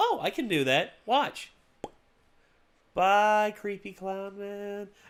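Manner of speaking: very slow, deliberate, high voice, every word stretched out. Imagining the girl answering the clown: imitating Ochako. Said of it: "she'll just be like".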